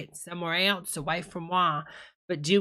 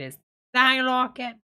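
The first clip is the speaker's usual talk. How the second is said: usual speaking voice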